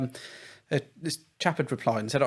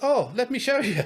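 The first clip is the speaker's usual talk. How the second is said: put-on Polish accent, squeaked up very high; 11 semitones higher, 4 dB louder than usual. Retelling an interviewee's words in a put-on Polish accent. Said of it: "That's my Polish accent".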